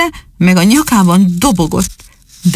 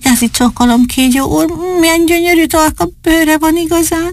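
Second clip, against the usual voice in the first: thin, small, very high, courteous voice; 9 semitones higher than usual. Narrator reads Dani greeting the snake, slightly thin, very polite voice. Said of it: "Kicsit vékony hangon, de nagyon udvariasan mondta".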